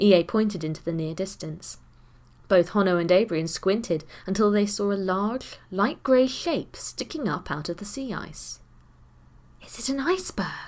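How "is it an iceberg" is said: hushed, tentative, pitched-up voice. [name], squinting at a grey shape in the sea ice, asks in a hushed voice. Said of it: "suggested [name] in a hushed voice".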